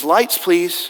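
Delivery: ordinary talk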